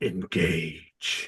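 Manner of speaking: hushed, whispered, furious voice. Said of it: "He says it like really angry".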